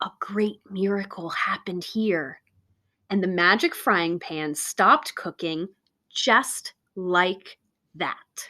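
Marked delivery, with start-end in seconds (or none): 0.0-2.4 hushed whisper. Narrator reading Sadie's line when the plates are heaped with latkes, whispering. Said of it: "Sadie whispered".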